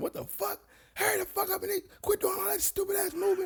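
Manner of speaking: drill sergeant screaming, very high and furious. Retelling how the drill sergeant yelled at a choking recruit: imitating someone yelling. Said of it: "yelling at him".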